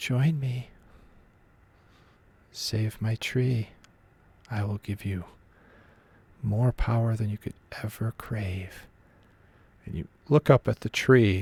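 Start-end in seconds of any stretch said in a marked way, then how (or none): 0.0-8.9 smooth, silky, very calming and soothing voice. Game narrator voicing a voice in a player's head near a tree, silky, calming voice. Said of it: "It's kind of a silky, very calming voice".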